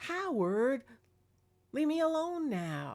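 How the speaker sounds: irritated cat voice. Describing orbs chasing their cat, the speaker voices the cat: Magic the cat, mock-annoyed. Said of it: "Like he was annoyed".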